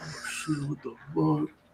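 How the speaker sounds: very quiet, high, hushed, put-on drunken outburst. Retelling a night out with a friend, the speaker imitating Grimes drunk. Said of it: "my friend's all drunk. He's like".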